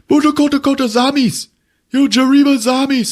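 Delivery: put-on squeaky, very high pleading in gibberish. Retelling a movie scene where a man asks about a son: retelling a pleading line. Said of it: "he's fucking pleading".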